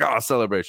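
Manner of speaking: shy, coy, understated little cheer. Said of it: "he's so coy, and then it's like".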